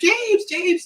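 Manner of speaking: mock screaming in a very high voice. Retelling a movie scene where a woman keeps screaming for the hero, imitating someone screaming. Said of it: "she's just screaming the whole time".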